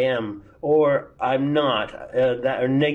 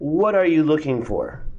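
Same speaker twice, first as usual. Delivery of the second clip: falling pitch on "looking for", dropping on "for". Intonation rule example for WH questions: falling pitch at the end. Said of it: "W H questions also fall".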